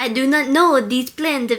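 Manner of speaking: put-on bad Russian accent. Trying out accents with another speaker, bad russian accent attempt. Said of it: "That does not sound Russian".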